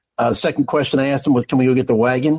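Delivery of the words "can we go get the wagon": usual speaking voice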